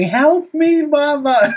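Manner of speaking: very high, tearful, wailing crying scream. Retelling how he curled up crying and screamed; imitating him screaming. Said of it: "starts screaming".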